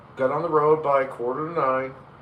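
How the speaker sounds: usual speaking voice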